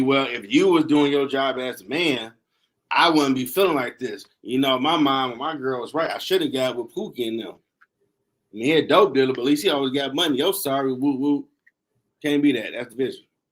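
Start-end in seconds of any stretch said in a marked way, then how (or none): none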